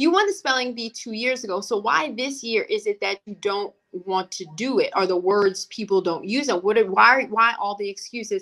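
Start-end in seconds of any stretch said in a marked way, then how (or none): none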